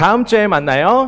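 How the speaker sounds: big, very high, loud calling out. Leading a group farewell before the group answers back, in a loud, big voice. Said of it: "큰 목소리로 해볼게요".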